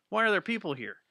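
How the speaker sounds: high-pitched, startled, spooked and freaked-out voice. Imitating someone who expected to be alone and finds others: imitating a freaked-out person. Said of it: "he was generally freaked out".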